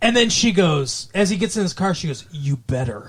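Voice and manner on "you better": play-acted dark, ominous, sinister, menacing voice. Retelling what she said as he got in his car, imitating a sinister voice. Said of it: "Like in this sinister voice".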